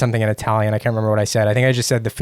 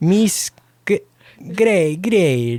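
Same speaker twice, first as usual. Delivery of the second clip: high-pitched, put-on, fake Italian accent; 9 semitones higher than usual. Retelling how they tried to pronounce a name: put-on Italian accent. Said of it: "I tried to pronounce it with an Italian accent".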